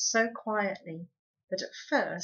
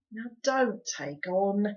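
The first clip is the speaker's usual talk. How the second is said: tired, weary, slower. Pod speaks as Homily moans and Arietti begins to cry, in a tired voice. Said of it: "said Pod in a tired voice".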